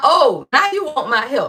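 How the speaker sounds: voice speaking as a deity. Acting out God answering someone who waited too long: voicing God. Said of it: "God talking about".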